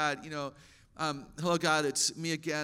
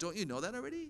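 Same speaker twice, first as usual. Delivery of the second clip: mock talking-down, judgmental, condescending tone; 3 semitones higher, 8 dB quieter than usual. Imitating how helpers answer someone asking for help: mock condescending tone. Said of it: "the tone of voice that implies you weren't listening".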